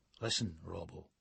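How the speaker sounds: low, hushed half-whisper under the breath. Narrator reading a man speaking to Robbo, half-whispering. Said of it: "he whispers".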